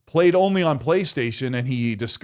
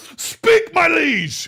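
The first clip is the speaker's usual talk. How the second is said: put-on very high, shouted, courtly old-style voice; 5 dB louder than usual. Asked by the other speaker to yell in a medieval voice: yelling in a medieval voice. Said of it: "yell at me in your medieval voice again".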